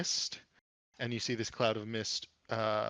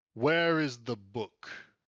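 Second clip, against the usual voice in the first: booming, slow, loud, forceful voice; 6 dB louder than usual. Voicing a red wizard looming on a balcony: booming voice. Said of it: "A booming voice comes from one".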